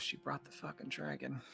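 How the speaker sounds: muttered under breath. Speaking in character on seeing a companion arrive with a dragon: muttered under breath. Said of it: "Under my breath".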